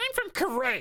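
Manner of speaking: put-on very high, loud little boy voice. Asked where he is from, the boy answers in a high-pitched little boy voice. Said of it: "I have a very high-pitched boy voice".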